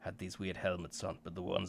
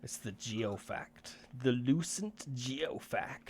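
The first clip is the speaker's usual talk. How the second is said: mock derisive, scoffing tone, pitched up; 5 semitones higher than usual. A character names the strange object, in a mocking voice. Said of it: "he says in like a mocking voice".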